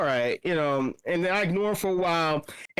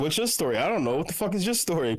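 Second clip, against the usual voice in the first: normal talking voice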